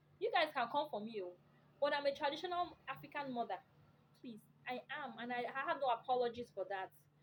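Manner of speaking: ordinary talk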